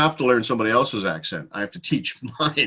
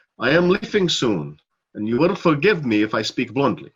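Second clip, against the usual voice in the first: put-on vampire-like accent with rolled R's. Imitating how the listener opened, failing at their accent: Dracula-like accent. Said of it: "I sounded more like Dracula".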